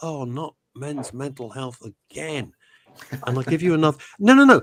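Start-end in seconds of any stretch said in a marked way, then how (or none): 0.0-2.5 put-on weary, fatigued voice, much quieter. Retelling how people reacted to the topic again, imitating fatigued people. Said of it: "I could just tell they were fatigued".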